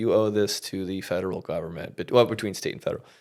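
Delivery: put-on flat, cold, blank, uncaring, indifferent delivery. Retelling her reply to the speaker's shocked question about taxes, imitating a cold, blank tone. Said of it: "very blankly and coldly, without any care".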